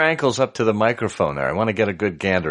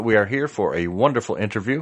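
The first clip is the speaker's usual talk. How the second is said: usual speaking voice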